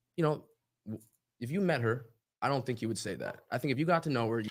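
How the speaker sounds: normal talking voice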